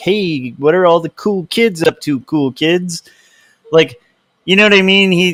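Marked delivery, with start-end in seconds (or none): 0.0-3.0 awkward, try-hard sketch character voice. Comparing someone to a sketch character, imitating the Steve Buscemi character. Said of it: "like the Steve Buscemi character in that sketch".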